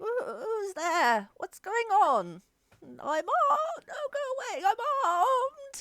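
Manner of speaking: very high, tiny, frail, feeble little voice. Game master voicing a person at the back during the fight, in a little feeble voice. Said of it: "little feeble voice comes from the back".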